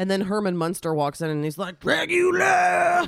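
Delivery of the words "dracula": very high, gritty hardcore metal shriek. Acting out a character who walks in yelling: metal scream voice. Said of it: "a really decent, like, metal voice".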